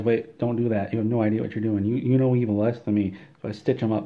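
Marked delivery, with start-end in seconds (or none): none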